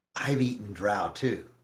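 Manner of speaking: soft, hushed, leaning-in half-whisper. Game master as Ella, leaning over to a player, Ella half-whispering. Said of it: "She leans over to you and whispers".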